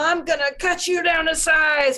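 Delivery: high beast voice. Voicing a Minotaur who charges in with an axe: Minotaur voice. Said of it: "he says it in his very Minotaur typey voice".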